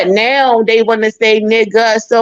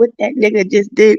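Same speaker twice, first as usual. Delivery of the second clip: imitated whispered voice. Retelling talking in the Kingdom Hall as a child: imitating a whisper. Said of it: "I'm whispering like a motherfucker".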